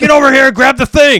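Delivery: very loud, high, belligerent barked yell. Retelling screaming at the kids during the gas leak: imitating own past yelling. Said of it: "I'm like".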